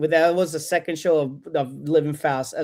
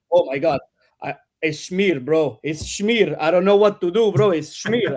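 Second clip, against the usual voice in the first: put-on thick Argentinian accent, slower pace. Retelling what a friend said while they were out walking, in a thick argentinian accent. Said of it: "thick Argentinian accent".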